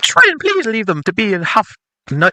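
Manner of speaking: put-on girly voice, very high and swooping. Showing another player how to read Cassandra's lines, in Cassandra's girl voice. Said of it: "you can read Cassandra's girl voice".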